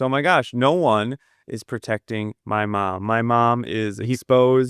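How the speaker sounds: plain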